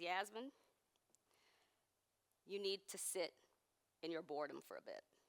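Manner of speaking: soft, very deadpan mock delivery, dry, expressionless. Recalling her grandfather's words to her at age four: retelling a deadpan line. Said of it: "very deadpan".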